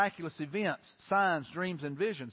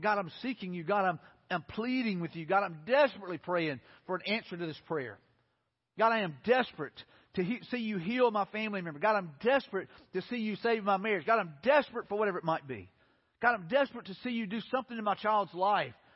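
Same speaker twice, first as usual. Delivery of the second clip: ordinary delivery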